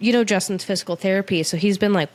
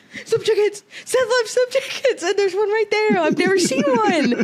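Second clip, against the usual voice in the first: put-on excited scream, pitched higher; 13 semitones higher than usual. Retelling answering people in the car: retelling a scream.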